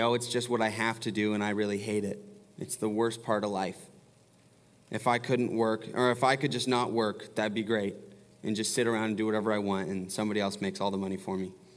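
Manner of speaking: ordinary talk, nothing marked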